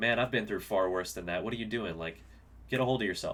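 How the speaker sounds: usual speaking voice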